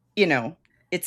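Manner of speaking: plain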